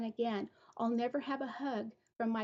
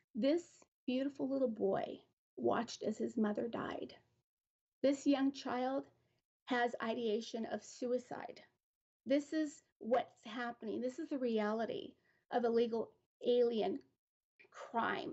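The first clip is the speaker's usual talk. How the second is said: choked-up voice, catching and breaking. Speaker addressing an audience about a grieving child, choked up. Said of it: "I'm choked up".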